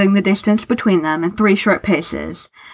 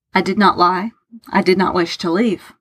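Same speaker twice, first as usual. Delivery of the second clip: usual speaking voice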